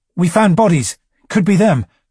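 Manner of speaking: barely contained panic. A narrator reads a Fourth squad soldier reporting to the lieutenant, with suppressed panic. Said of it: "a note of suppressed panic quite clearly detectable".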